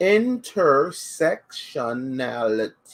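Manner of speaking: slow, deliberate, each syllable stretched out. Saying a long word again on request, said slower. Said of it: "say that word again, but slower".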